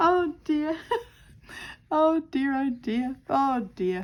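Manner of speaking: chuckling through the words. Still laughing at oneself while setting up a project, laughing while talking. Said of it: "I'm still laughing at myself".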